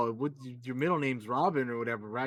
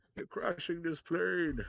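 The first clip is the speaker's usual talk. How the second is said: quieter, muffled movie-villain voice; 4 semitones higher, 5 dB quieter than usual. Trading favorite movie quotes with a friend, doing the Bane voice. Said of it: "that Bane voice is just like it's iconic".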